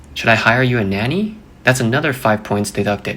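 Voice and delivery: ordinary talk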